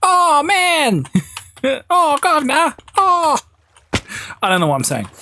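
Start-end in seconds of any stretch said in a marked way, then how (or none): 0.1-3.4 very high, very slow, stretched-out youthful drawl. Mocking how young viewers talk: imitating Rob Beckett. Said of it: "you're all Rob Beckett".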